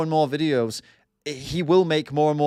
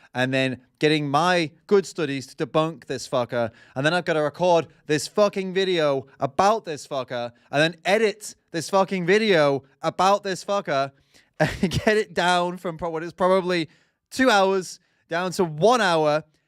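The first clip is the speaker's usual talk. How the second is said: ordinary delivery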